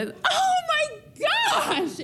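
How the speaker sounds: very high, slow scream. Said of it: "I screamed".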